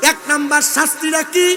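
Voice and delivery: fervent, loud, high-pitched preaching delivery.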